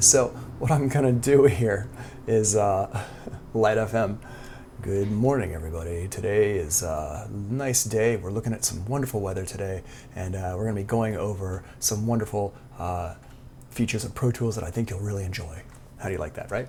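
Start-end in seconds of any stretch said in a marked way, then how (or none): 3.5-15.6 low, soft on-air radio DJ patter. In a Pro Tools tutorial, the host speaks in a good radio voice. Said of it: "good radio voice there".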